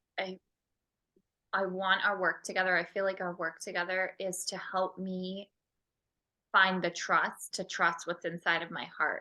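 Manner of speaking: ordinary delivery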